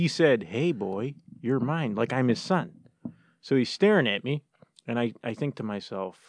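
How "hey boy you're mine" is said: spoken as a whisper. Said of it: "he whispers to me".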